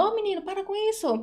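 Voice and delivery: stern, harsh, very high, scolding tone. Showing how people talk to Davi Luca, in a harsh scolding tone. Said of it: "assim, tipo, em tom de brigando".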